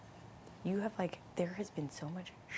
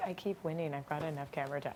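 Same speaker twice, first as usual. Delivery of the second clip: plain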